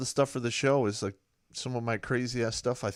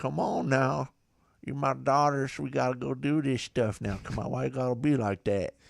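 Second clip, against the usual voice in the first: put-on, lazy, drawling Southern accent; 2 semitones higher than usual. A dad retells talking to his daughters in his southern drawl. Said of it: "I'll use that southern drawl".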